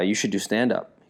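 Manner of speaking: ordinary talk, nothing marked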